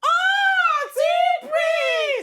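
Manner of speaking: loud screaming like an excited fan. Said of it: "now you get just shout".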